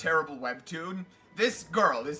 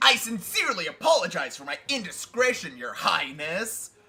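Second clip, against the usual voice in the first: bad put-on cartoon hedgehog voice. Speaker in character apologizing to Your Highness, shitty Sonic the Hedgehog impression. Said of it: "a shitty Sonic the Hedgehog impression".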